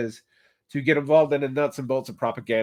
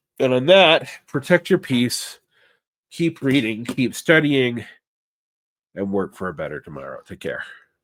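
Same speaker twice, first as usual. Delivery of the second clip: hoarse, raspy, sick-sounding voice; 3 dB louder than usual. Signing off a video while sick, raspy from being sick. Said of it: "I have a rasp today".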